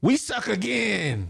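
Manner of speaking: creaky, high, rough put-on character voice. Reading a viewer's comment aloud in a Waterboy voice. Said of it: "in my water boy voice".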